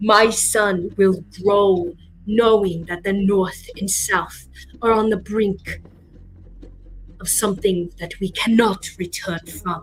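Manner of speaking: big, thunderous booming voice. Narrating a scene, voicing a man booming down from the top of the stairs. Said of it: "a voice booming down from the top of the stairs".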